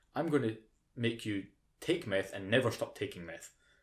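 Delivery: plain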